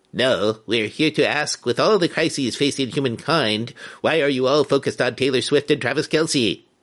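otherworldly put-on alien voice. The aliens answer the guy who has questioned them, alien voice. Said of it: "Nice alien voice".

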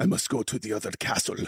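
put-on breathy, sexy Spanish accent. Doing a sexy Mario line as Antonio Banderas: Antonio Banderas voice. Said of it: "like Antonio Banderas, like".

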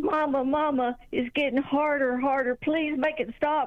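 put-on play-acted, tearful, crying toddler voice. Retelling how their toddler son broke down in Walmart, imitating him crying. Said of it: "started crying".

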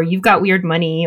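ordinary talk, nothing marked

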